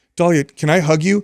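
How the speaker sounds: put-on high, slow, panicked, panicky pleading. Retelling how a son pleaded with his sister: imitating someone panicking. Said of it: "he's like panicking".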